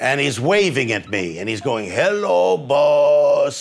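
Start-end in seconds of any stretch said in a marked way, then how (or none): 1.9-3.6 put-on drunken, drawn-out giant voice. Retelling how a drunk giant waved from the ceiling: imitating a drunk giant. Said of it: "like this".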